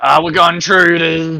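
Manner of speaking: very loud, booming, drawn-out alarmed scream. Voicing the captain who spots intruders: screaming. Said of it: "So he's just screaming".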